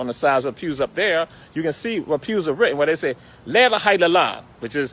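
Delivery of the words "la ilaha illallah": usual speaking voice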